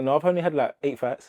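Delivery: ordinary talk, nothing marked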